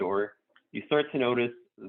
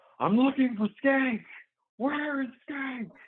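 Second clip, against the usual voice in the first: very high, raised, loud shout. A game master voices an unseen person yelling amid gunfire, loud yell. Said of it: "you just hear a loud voice yell".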